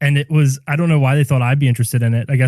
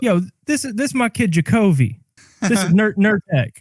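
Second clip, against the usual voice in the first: put-on higher mocking voice; 8 semitones higher than usual.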